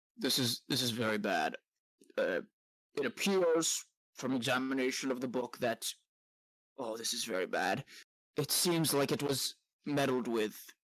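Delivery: timid, flustered, sheepish, nervous wizard character voice. Voicing a sheepish wizard explaining the damage to the book: sheepish nervous wizard voice. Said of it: "he's very sheepish looking".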